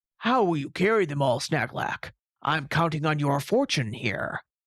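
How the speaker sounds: hearty tone, heartily spoken. Reading a story, a character breaks an uncomfortable silence with a question, hearty. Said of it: "[name] was stroking his beard. His amber eyes rested on [name], / [name] was stroking his beard. / [name] broke it with a hearty".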